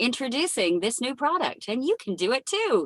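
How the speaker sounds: commercial announcer voice. Speaker showing how he naturally sounds, in a commercial voice. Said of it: "I speak very much like a commercial voice".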